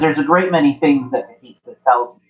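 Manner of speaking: usual speaking voice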